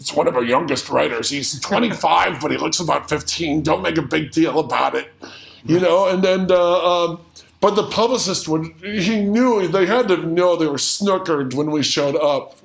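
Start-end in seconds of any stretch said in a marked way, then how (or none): 0.0-5.1 rough, creaky put-on older man voice. Retelling phone calls made to publicists: imitating an older man voice. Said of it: "in an older man voice saying".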